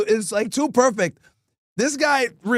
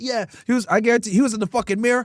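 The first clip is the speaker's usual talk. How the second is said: plain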